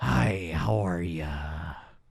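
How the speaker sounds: put-on very slow, stretched-out old man voice. Describing an imagined film scene's reveal: old Jack Nicholson Joker voice. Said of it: "old ass Jack Nicholson Joker being like".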